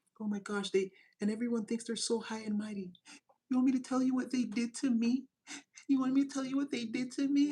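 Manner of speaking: put-on whispering. Imitating people who gossip about an ex: imitating people whispering. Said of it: "people whispering".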